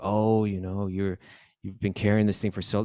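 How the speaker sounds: put-on sarcastic, mocking king voice. Retelling a story, acting out the king mocking his carrier: imitating a sarcastic king. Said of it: "he's being real sarcastic".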